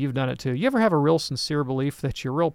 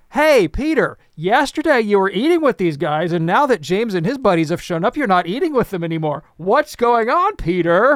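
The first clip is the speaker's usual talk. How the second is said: booming, loud, high call-out; 6 semitones higher, 7 dB louder than usual. Telling how Paul confronted Peter in front of everybody: retelling Paul's loud call-out. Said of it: "in front of everybody in a loud voice".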